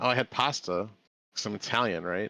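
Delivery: ordinary delivery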